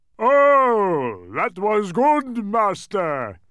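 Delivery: loud, booming, full-throated bellow with drawn-out oh. Reading a story aloud, voice the creature just released from a bottle, bellowing. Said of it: "he bellowed".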